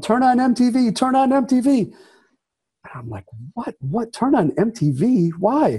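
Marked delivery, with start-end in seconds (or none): 0.0-1.9 high screaming, said twice. Woken at 3 a.m., the speaker relays his friend's phone call, imitating Doug screaming. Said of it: "he's screaming in the phone".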